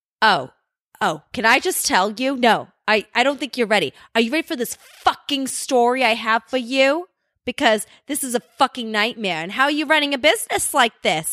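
put-on North Jersey woman's accent. Speaker quoting a customer from Jersey on a call, North Jersey woman's accent. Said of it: "she's speaking like every woman in the North Jersey".

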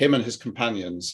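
plain reading voice

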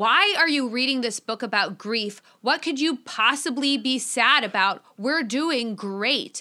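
incredulous, exasperated scolding tone. Retelling a scene where the mother yells at Suzanne: imitating a mother yelling. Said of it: "her mother is yelling at her".

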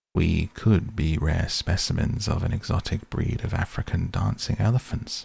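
ordinary delivery

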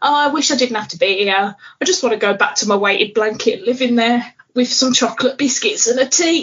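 acted-out tearful, crying speech, words through tears. Retelling her boss asking how she is doing, acting out crying. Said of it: "I just immediately start crying and going".

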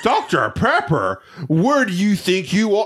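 put-on snooty, high, teasing, mocking sarcasm. Retelling how a waiter mocked your drink order, retelling sarcastic mockery. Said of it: "he was like doing it sarcastic".

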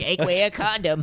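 put-on high grandma voice, old lady style. Imitating a friend's mom speaking to him, in a grandma voice. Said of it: "why'd I do like a grandma?".

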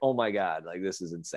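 amazed, half-laughing, disbelieving tone. Retelling his own reaction at speed in turn three: imitating almost laughing. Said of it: "almost laughing".

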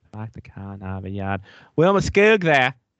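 put-on Boston-accented speech. Recalling how a player's name was said during a game, in a Boston accent. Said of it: "the Skoog in the Boston accent".

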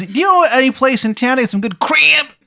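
very high, badly botched, terrible Maryland accent. Voicing a character who asks about dragon eggs: terrible Maryland accent. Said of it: "His accent is so bad".

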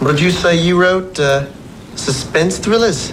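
put-on New Zealand accent. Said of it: "that's a pretty damn fine New Zealand accent".

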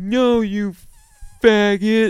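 loud, very high-pitched, mocking roasting jab. Retelling what a comedian said when they ran into him: imitating Michael's voice. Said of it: "the voice I'm doing, that is an accurate voice".

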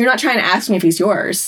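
ordinary talk

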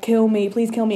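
ordinary talk

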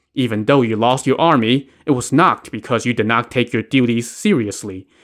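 ordinary delivery, nothing marked

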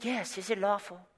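put-on English accent. Acting out the Pharisees asking Jesus again: put-on English accent. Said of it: "Let's just pretend they had that accent".

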